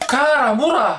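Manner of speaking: blasé, jaded seen-it-all tone, tossed off high.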